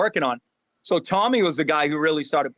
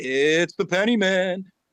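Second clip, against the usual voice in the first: eerie, slow, creepy put-on spooky drawl; 3 semitones higher than usual. Retelling how he introduced every coin video, in a creepy voice. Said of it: "introing the videos just because I thought it was funny with this creepy voice".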